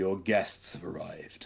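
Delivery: stately, grand, declaiming delivery. Narrating a scene where a creature speaks, in a booming voice. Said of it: "a booming voice".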